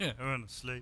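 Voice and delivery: put-on distracted voice. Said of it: "you just sounded like you got distracted".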